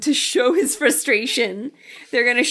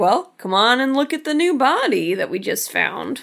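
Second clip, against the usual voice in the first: ordinary delivery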